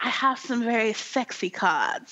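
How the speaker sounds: mock British accent voice. Retelling a card-game story, quoting the man: put-on British accent. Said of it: "they're British".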